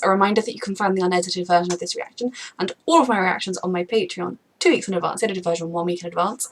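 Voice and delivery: very fast, rushed, rattled-off delivery. Reaction-video host rushes through a Patreon reminder before the episode, very fast. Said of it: "I definitely said that really fast".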